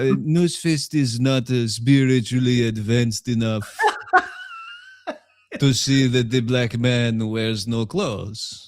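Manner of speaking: odd put-on German accent, swooping. Speaker acts out an imagined bit about himself on camera, weird German accent. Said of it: "I have a weird German accent and I'm going".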